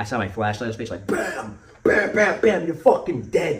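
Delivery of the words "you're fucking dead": put-on, wild, high-pitched scream. Retelling bursting in on a sleeping man with a flashlight, the speaker re-enacts screaming. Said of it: "So I'm screaming".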